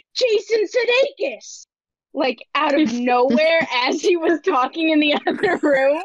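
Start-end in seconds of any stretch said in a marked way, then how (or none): 0.2-1.7 mock sudden shrill shout, very high and loud. Retelling shouting out of nowhere while dad was on a call next door: retelling a loud shout. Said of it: "really loudly, I shouted".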